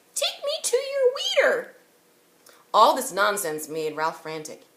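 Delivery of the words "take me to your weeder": very high, squeaky, sing-song voice. Reading a story aloud, a boy answering his own joke: squeaky voice. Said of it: "answered in a squeaky voice".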